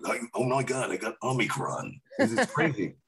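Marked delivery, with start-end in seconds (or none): 0.0-2.0 epic, dramatic movie trailer announcer voice. Joking with the others, slipping into a movie trailer voice. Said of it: "your famous movie trailer voice, movie guy voice".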